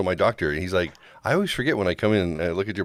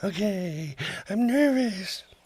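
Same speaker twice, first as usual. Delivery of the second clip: squeaky, very high, nervous put-on puppet voice; 13 semitones higher than usual. Speaking as a puppet character to a listener, in puppet voice. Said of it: "Do you really sound like that?".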